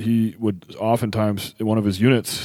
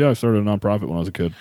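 put-on nonchalant tone. Retelling how Kylie, a Marine, said it: imitating Kylie's nonchalant tone. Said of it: "it's very nonchalantly".

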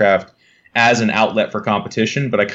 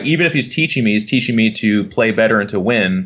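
plain

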